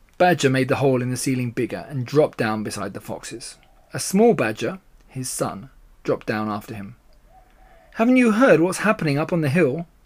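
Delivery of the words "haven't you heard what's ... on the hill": eager, excited, keyed-up, pitched-up delivery. A badger drops down beside the foxes and asks them, excited. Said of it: "Badger said excitedly".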